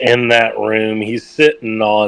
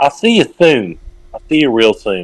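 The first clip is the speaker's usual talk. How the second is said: pretty firm and stern voice. Playing Kel as the big dude walks out, in Kel's stern voice. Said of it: "with a pretty stern voice".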